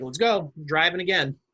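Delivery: ordinary delivery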